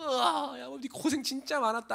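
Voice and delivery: play-acted high, tearful sobbing wail. A speaker retells Laban crying along with his relative's story, acting out a man sobbing. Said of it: "라반이 같이 울어".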